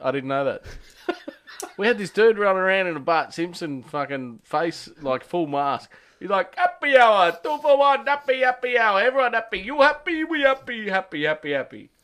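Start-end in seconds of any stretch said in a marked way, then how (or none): 6.5-11.8 very high, fake Greek accent. Retelling a guy in a full mask running around: put-on foreign accent. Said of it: "Was he Greek?".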